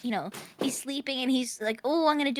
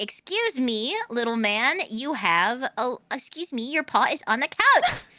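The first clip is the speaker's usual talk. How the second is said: mock joking scolding, louder; 4 dB louder than usual. Retelling how mom jokingly scolds the dog on the couch: imitating mom jokingly scolding. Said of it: "jokingly scold him".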